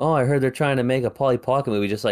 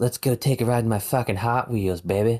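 put-on Boston accent. Joking about a Hot Wheels movie starring Mark Wahlberg: Mark Wahlberg Boston accent. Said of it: "whatever he'll say with his Boston accent".

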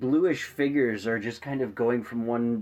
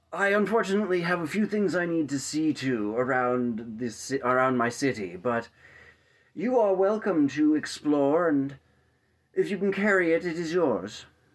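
put-on old wizard voice, much higher; 4 semitones higher than usual. Game master voicing a wizard as the party steps through a portal, old wizard voice. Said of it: "the old wizard says".

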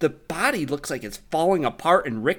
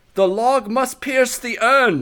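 very loud, high-pitched shout; 9 semitones higher, 9 dB louder than usual. Retelling what a character yells during a scene: imitating Ser Jorah yelling. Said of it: "he yells out".

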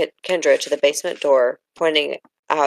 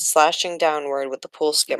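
ordinary delivery

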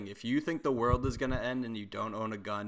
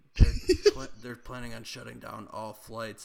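put-on whisper; 4 dB louder than usual. Imitating bunker people who whisper rumors in grocery stores: imitating someone whispering. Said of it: "going up behind people and whispering".

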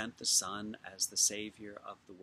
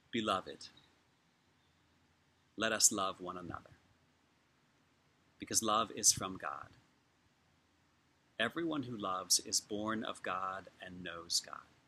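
slow, unhurried reading with long pauses between lines. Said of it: "'cause I'm gonna read it slowly".

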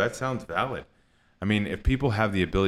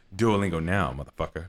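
menacing, in-your-face tough-guy character voice. The Duolingo bird pointing a gun at a learner, in a Samuel L. Jackson voice. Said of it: "in this Samuel Jackson voice".

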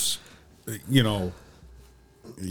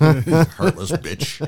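slow, higher-pitched mocking voice. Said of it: "No, I'm just kidding".

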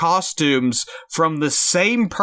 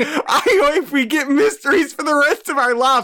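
put-on very high-pitched, maniacal lunatic laughter while talking; 9 semitones higher than usual. Recapping a film, speaker quotes a character throwing money into a wishing well, laughing like a lunatic. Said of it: "he's laughing like a lunatic".

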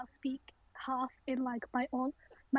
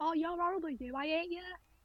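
put-on northern English Rochdale accent, dropped h's, higher; 4 semitones higher, 3 dB quieter than usual. Imitating people in the school corridor: Rochdale accent, dropped H's. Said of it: "people that spoke like that".

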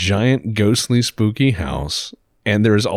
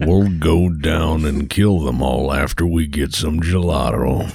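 put-on Texas drawl, lower pitch; 6 semitones lower than usual. Joking around with another speaker in a put-on Texas drawl. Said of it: "I did put a little drawl in there".

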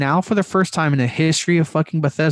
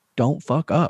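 put-on blunt, aggressive, in-your-face confrontational voice. Acting out an imagined quote, not passive aggressive: imitating in-your-face confrontation. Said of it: "straight up in your face".

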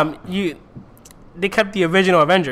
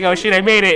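ordinary delivery

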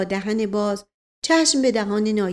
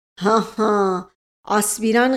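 satisfied, pleased, terrifying, dreadful laugh. A narrator reads the naib's laugh: satisfied, terrifying laugh. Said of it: "صدای خنده رضایت نایب که بسیار هولناک بود".

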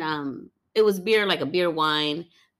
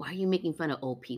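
put-on angry tone, quieter; 8 dB quieter than usual. Retelling what a lady said after the show: imitating an angry question. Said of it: "in an angry way?".

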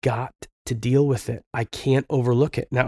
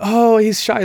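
mock nervous, high, loud laughed-out tone; 9 semitones higher, 6 dB louder than usual. Retelling how a shy boy's mother excused him: imitating a nervous laugh. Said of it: "she'd kind of nervously laugh".

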